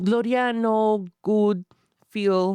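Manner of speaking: put-on Mexican twang, stuttering and stumbling. Joining in as the other speaker describes putting on a voice, throw in a Mexican twang. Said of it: "Mexican twang in".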